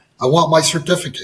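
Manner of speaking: ordinary talk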